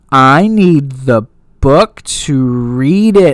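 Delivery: very slow, deliberate, spelled-out delivery. Retelling a tv character who repeats her request to slow listeners: imitating someone talking slowly. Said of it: "talks slowly".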